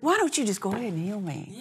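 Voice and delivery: quiet aside muttered to oneself under the breath. Retelling own earlier words: imitating muttering under breath. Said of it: "basically under my breath".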